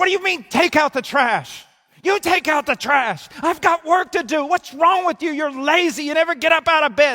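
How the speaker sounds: put-on furious, impatient snap, very high and loud. Telling of a husband snapping back when his wife says take out the trash, imitating an angry retort. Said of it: "He's angry. He's impatient".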